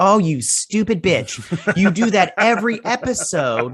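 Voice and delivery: acted angry ranting. Retelling own reaction to a TV captain's hypocrisy: imitating own angry rant. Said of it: "I'm so mad right now".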